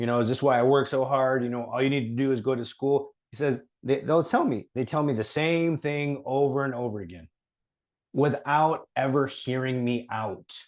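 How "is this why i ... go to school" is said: ordinary talk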